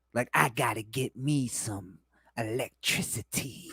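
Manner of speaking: put-on low, quiet kid voice playing a villain. Speaker mocks an actor's performance, imitating a little kid doing a villain voice. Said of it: "like a little kid doing a villain voice".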